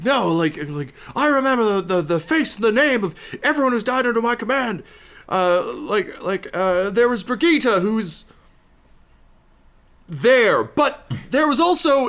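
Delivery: very loud, very high, shrill, furious yelling. Voicing a captain who yells at the party: angry yelling captain. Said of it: "as he yells".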